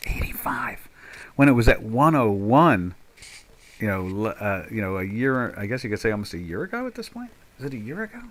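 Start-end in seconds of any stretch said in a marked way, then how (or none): 0.1-0.8 barely voiced, hushed, breathy, secretive whisper. Looking at a price chart of the Swiss franc: whispering. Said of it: "I gotta whisper when I say that".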